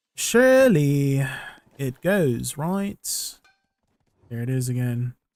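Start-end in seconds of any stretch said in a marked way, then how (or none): 0.2-3.4 slow Queen's English British accent. Streamer talking to viewers during a game, in a British accent. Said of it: "My great British accent".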